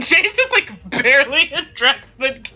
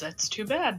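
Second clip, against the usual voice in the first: very soft, barely audible under-breath mutter; 5 semitones lower, 13 dB quieter than usual. Voicing a character who answers another character: muttered under his breath. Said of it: "under his breath goes".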